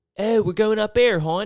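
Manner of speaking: shrill, very high, loud hometown twang accent. Mocking how people talk in Baltimore: Baltimore accent. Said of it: "Baltimore just has the worst accent".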